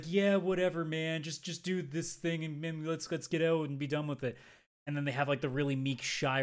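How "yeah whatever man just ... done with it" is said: chilled-out, laid-back stoner robot voice. Describing different kinds of robot characters, stoner robot voice. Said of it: "stoner level robots that are just like".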